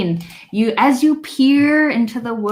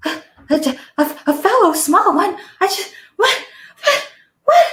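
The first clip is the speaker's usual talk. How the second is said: frantic, panicked goblin voice stammering, very high-pitched; 9 semitones higher than usual. Voicing a goblin looking up at a small archer: panicked goblin stammering. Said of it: "with a panicked look on his face".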